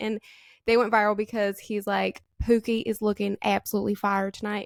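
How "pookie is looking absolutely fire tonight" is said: bad, butchered put-on Southern American accent. Quoting a man's viral video line to his partner, bad put-on southern accent. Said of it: "I'm butchering the southern accent".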